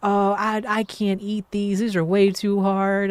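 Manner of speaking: indignant, put-out complaining tone. Recounting a lady who came back into the kitchen, imitating her yelling. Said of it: "she's yelling at me about her".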